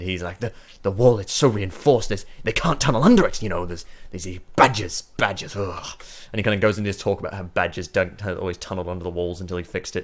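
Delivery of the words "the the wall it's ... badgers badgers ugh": affronted dwarf character voice, louder. Voicing an offended dwarf boasting about his wall: offended dwarf voice. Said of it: "he looks so offended".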